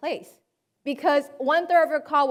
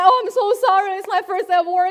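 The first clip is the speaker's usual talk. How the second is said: tearful, weeping, crying voice; 5 semitones higher, 5 dB louder than usual. Retelling how the truck driver apologized after the crash: imitating someone weeping. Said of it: "crying over his face and be like".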